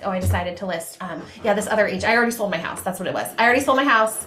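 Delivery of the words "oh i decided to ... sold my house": usual speaking voice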